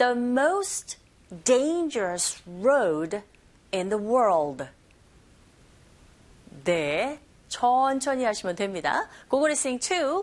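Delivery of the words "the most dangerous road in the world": very slow, careful model reading. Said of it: "천천히 할게요".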